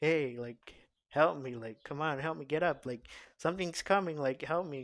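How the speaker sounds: loud, begging put-on voice. Retelling a dream, pleading to a brother for help: imitating pleading for help. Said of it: "I'm pleading to my brother".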